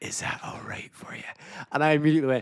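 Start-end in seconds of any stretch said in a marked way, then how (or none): 0.0-1.2 gentle, very quiet, soft whisper. Retelling what a partner said into the ear during an exercise: imitating a whisper. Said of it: "But he whispered".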